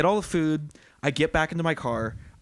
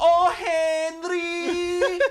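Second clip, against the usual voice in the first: put-on heavy Persian accent, pitched very high, one word drawn out; 14 semitones higher than usual. Retelling how a coworker called out whenever something went wrong, heavy Persian accent. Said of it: "she had a sh- heavy accent".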